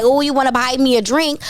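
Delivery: plain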